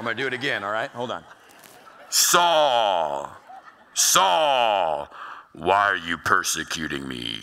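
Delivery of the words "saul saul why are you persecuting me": deep, slow, loud call with the name drawn out. Retelling Saul's conversion, voicing the voice calling from the light, Jesus voice. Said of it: "That's always my Jesus voice".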